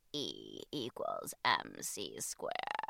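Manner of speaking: low, quiet, creaky vocal fry.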